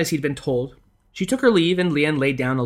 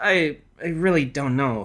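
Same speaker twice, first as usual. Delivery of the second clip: pathetic, pitiful mumbling. A man is asked what he did to upset a girl, mumbling pathetically. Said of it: "he mumbled pathetically".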